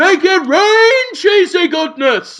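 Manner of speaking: high, slow, loud festive shout.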